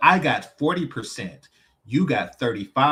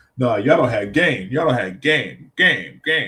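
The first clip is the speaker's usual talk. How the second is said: mock arrogant, condescending, talking-down tone; 4 dB louder than usual. Imitating a guy on a panel who talks down to everybody: imitating condescending talk. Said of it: "he would just talk down to everybody else".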